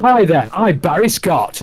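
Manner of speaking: high, slow, drawn-out screaming bellow. Recalling a loud cleaning advert, imitating Barry Scott screaming. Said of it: "Screaming, wasn't he?".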